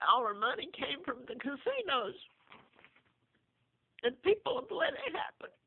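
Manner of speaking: crying, speaking through tears. Mother describing what was done to her family, crying. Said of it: "Excuse me for crying".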